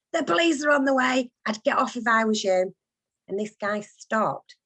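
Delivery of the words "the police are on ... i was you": strident, high-pitched fishwife holler. Retelling shouting out the bedroom window at an intruder: retelling a fishwife-like shout. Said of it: "Like some fishwife".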